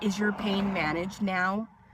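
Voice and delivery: mock, really condescending, patronising talking-down tone. Retelling what a nurse asked after surgery: imitating a condescending tone. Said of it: "really condescending".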